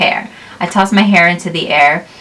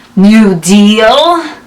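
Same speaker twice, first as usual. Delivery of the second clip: loud growling ogre voice, "deal" drawn out; 3 semitones higher, 7 dB louder than usual. Narrator reads the ogre growling into the narrator's face: growling ogre voice. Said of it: "She growls into my face".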